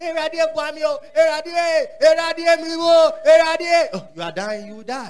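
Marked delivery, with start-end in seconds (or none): 0.0-3.9 slow, repetitive, beseeching, pleading, begging tone. Mocking how believers pray: imitating a begging believer. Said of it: "You don't beg. Like".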